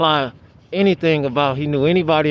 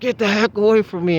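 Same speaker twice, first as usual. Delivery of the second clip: mock, high, furious, enraged outburst; 6 semitones higher than usual. Retelling yelling at a stranger: retelling an enraged yell. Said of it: "in rage".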